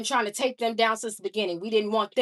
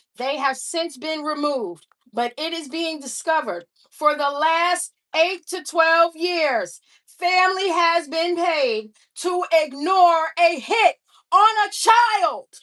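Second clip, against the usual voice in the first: furious yelling, loud and high; 7 semitones higher, 6 dB louder than usual. Addressing 'y'all', the speaker is yelling angrily. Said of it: "I'm not sorry for yelling".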